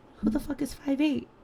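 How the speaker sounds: whispering. Retelling whispering a question to their mom at the doctor's, retelling a whisper. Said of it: "I whispered to my mom".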